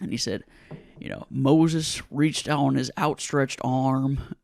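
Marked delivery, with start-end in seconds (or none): 1.3-4.2 broad, heavy, put-on Southern accent and drawl. Retelling how a dad from Alabama reads the prayer book: imitating a Southern drawl. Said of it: "the biggest Southern drawl in the world".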